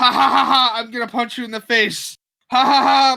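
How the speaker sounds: very high, loud, jeering, mocking laugh. Retelling how a customer laughed while threatening you as you scanned his items, imitating his laughing. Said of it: "He's laughing, going".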